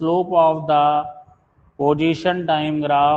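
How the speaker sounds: very slow, spaced-out dictation pace, word by word.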